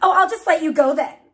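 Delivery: curt, snippy tone. A mother retelling his reaction when her daughter needed her, imitating a snippy tone. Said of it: "with a snippy tone like that".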